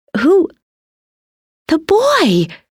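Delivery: very high, excited, swooping outburst. Talking with her sister, one sister suddenly exclaims. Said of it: "Frances exclaimed".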